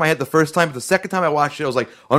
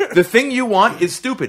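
mock blunt, raised, pitched-up scolding yell; 7 semitones higher than usual. Retelling a movie scene where Luke yells at the audience: imitating Luke yelling. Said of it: "Luke was yelling at us".

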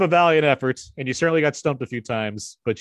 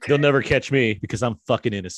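ordinary talk, nothing marked

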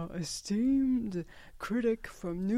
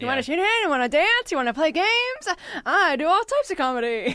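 high, loud showbiz patter, pitched up; 7 semitones higher, 8 dB louder than usual. Performing an impression in a contest: Mrs. Maisel impression. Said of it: "My impression of Mrs. Maisel".

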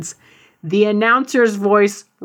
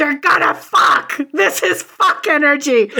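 put-on wild, high, excited screamed outburst; 6 semitones higher than usual. Retelling the moment two kept-apart wrestlers faced off, imitating Marissa screaming. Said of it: "Marissa just started screaming".

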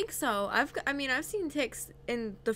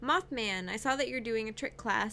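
ordinary talk

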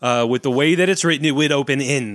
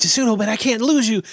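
hushed whisper, higher pitch; 8 semitones higher than usual. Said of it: "these two people whispering back and forth".

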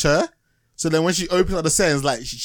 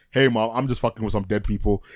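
put-on deep male voice, pitched lower; 5 semitones lower than usual. Retelling what a virtual reality player said to her mom: imitating a deep guy's voice. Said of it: "it's a deep guy's voice".

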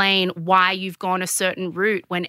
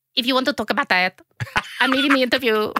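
put-on Spanish accent with the voice pitched up; 5 semitones higher than usual. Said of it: "Why is my [name] like the Spanish flea".

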